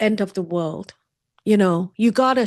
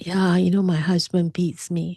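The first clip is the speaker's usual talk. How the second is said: put-on quiet speaking voice; 2 semitones lower than usual. Retelling telling a colleague about abuse: imitating own quiet words. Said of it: "So I just said quietly".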